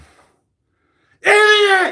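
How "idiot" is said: very high, loud drill sergeant scream, full volume. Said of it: "He would just scream".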